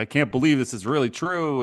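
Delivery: fake tearful, all choked-up crying voice. Mocking a player's speech before his first game: mock choked-up Kyrie Irving. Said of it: "getting all choked up and this fake crying".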